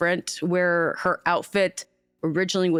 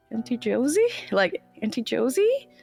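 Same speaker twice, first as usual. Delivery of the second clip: tender, gentle, wondering voice, pitched higher; 5 semitones higher than usual. Retelling how she stared, then called to Auntie Josie in a soft voice. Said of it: "in like almost like a soft voice".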